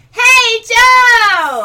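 very loud, high call, held long. Calling out to a cow after being asked to say it louder: louder. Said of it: "Say it louder".

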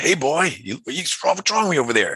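bad put-on American accent. Recalling a voice calling out to him, the speaker uses a bad American accent. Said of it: "a bad American accent".

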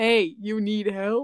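put-on low woman's voice. Describing a woman's voice, the speaker imitates her lower tone. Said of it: "She kind of had a lower".

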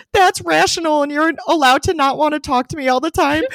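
put-on crying, sobbing harder through the words. Retelling a conversation with him, speaker quotes their past self crying harder. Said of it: "But then I start crying harder and I was like".

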